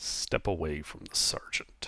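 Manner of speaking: low, breathy near-whisper. Voicing a captain on the stairs ordering someone away: low voice. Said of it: "you hear a low voice from the stairs".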